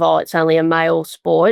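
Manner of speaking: ordinary delivery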